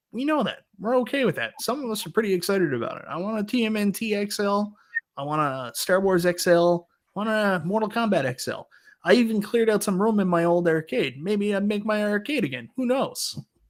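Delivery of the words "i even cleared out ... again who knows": sudden put-on Italian-American accent, out the mouth's side. Talking to co-hosts, slipping into a sudden put-on Italian accent. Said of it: "Why are you Italian all of a sudden?".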